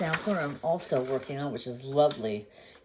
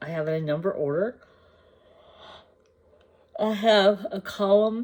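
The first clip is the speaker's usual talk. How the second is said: mid-yawn, higher and louder; 5 semitones higher, 4 dB louder than usual. Explaining a floss spreadsheet to viewers, talking through a yawn. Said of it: "Sorry, I'm yawning".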